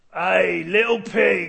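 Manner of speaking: put-on London gangster accent. Voicing the pig's old friends calling to him: London gangster accent. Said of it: "they talk like London gangsters".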